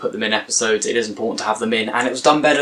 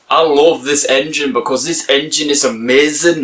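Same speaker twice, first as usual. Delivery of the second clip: bad, exaggerated, over-the-top northern English accent; 4 semitones higher, 4 dB louder than usual. Quoting a character's speech from an episode: bad northern accent. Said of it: "That was the worst northern accent you'll ever hear in your life".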